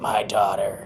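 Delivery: put-on gravelly, raspy man's voice. Retelling a strange voice that came through: imitating a gravelly raspy man's voice. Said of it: "It was like a gravelly, raspy man's voice".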